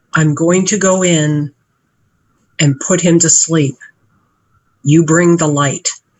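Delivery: speaking in a whisper. Whispering in character to Yarrow before sneaking through a door: whispering. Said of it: "I whisper to Yarrow".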